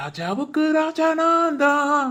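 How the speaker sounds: slow, jolly, carefree sing-song. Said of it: "அப்படின்னு ரொம்ப ஜாலியா".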